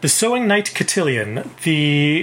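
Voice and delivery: ordinary talk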